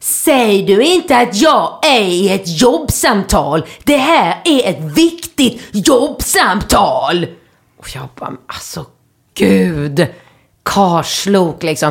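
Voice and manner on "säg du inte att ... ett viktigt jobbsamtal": fancy, posh, put-on Skåne dialect. Retelling what a man said at the rolled-down car window, posh Scanian accent. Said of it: "på sin tjusiga skånska".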